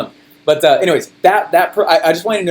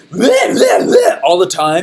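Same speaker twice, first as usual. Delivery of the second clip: put-on overhyped enthusiasm. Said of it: "that stupid and hypey".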